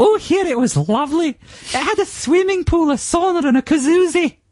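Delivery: very high Glaswegian voice, almost camp. Quoting a woman describing her holiday hotel room, higher-pitched glaswegian accent. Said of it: "slightly higher pitched, almost but not quite camp Glaswegian accent".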